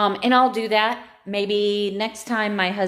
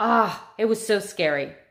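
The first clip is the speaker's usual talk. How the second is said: slow, choked-up voice catching, near tears. Recalling a frightening assault experience while getting choked up. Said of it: "getting all choked up and wanna cry".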